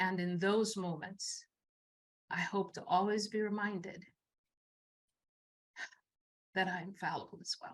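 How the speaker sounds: getting emotional, choked voice. Sharing a reflection, becoming emotional again: getting emotional. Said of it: "And I'm getting emotional again".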